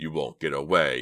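snarling voice. Mister Farison appears at the window and calls after Dina and Jade, snarling. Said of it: "he snarled".

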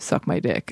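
mumbled, half-swallowed, muttered under the breath. Speaker retells what a man he smiled at on the street said, muttered under his breath. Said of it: "under his breath".

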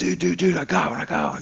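acted-out shouting. Retelling a fishing trip, calling to a buddy about a fish, retelling a yell. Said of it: "I'm like yelling to my buddy".

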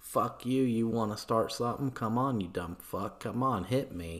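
fake Boston accent sliding into broad Australian accent. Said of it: "my fake Boston accent sounds like some kind of Australian bogan accent".

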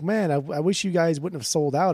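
ordinary delivery

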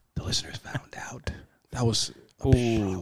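hushed whisper. Urging another speaker to whisper, the speaker delivers the line whispering.

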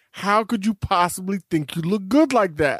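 normal talking voice

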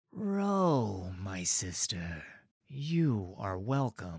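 unhurried, deep, low voice, very slow. An armed guard greets ro by name as she comes in, low and soft. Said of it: "his voice low and soft".

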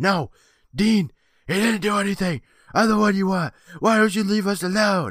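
mock very high, shrill shout. Recapping an episode, acting out Sean yelling after the zombie. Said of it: "starts yelling after the zombie".

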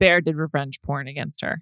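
grave, solemn delivery. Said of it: "I don't know why I said it like that".

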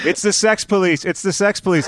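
small, contained, high, mild scream. Retelling band members bursting a door down: imitating band members screaming. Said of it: "start screaming".

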